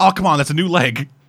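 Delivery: imitated small, mild pained yelp. Retelling a scene where a character gets stabbed in the leg: imitating a scream. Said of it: "gets stabbed in the leg and screams".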